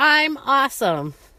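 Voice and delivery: high, emphatic, wholehearted, meaning every word. Guiding a listener through an affirmation, modeling it wholehearted and emphatic. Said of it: "even better than that".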